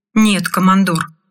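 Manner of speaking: ordinary delivery, nothing marked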